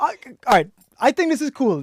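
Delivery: loud, very high-pitched, giggly laughing talk. Just welcomed onto the show, the guest keeps cracking up: laughing while talking. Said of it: "I don't know why I'm laughing".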